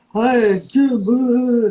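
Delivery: loud, high, big, showy, bold go-for-it delivery. Retelling a student arriving at the door for privates: imitating Jim Carrey. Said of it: "doing all this Jim Carrey stuff".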